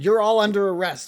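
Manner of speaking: loud high shout. Voicing a guard arresting the party: guard shouting. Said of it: "that guard there is going to shout".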